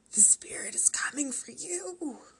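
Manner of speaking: high, eerie, spooky raspy voice. Narrator reads a girl's warning to another girl during a card game, rasping. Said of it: "Victoria rasped".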